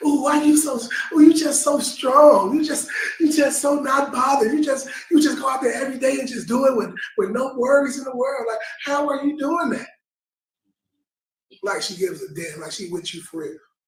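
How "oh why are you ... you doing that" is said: high, fawning, gushing, awestruck flattery. Retelling Delilah questioning Samson in Judges chapter sixteen: mock-awed Delilah flattery. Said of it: "like she's so in awe of you".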